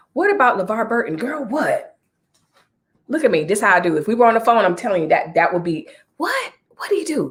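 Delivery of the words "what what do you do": put-on whisper, higher and quieter.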